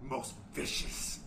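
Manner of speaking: slow, hushed, menacing promo-style whisper.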